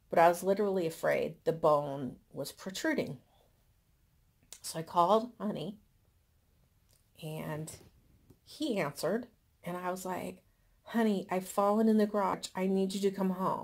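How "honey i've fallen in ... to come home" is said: put-on scared, frightened voice. Retelling a call about a fall in the garage: retelling a frightened plea. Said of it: "he can hear how frightened I am".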